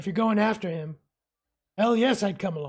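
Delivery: rough, really gruff character voice. Narrator voicing a character's reply to a player, gruff voice. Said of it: "he says in a really gruffy voice".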